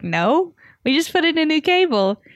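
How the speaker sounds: put-on aggressively thick Canadian accent, high, swooping. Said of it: "aggressively Canadian accent".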